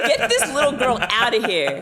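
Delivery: play-acted irritated, fed-up, annoyed exclamation. Retelling a reaction to a scene in a film: imitating own annoyed reaction. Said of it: "I was so annoyed".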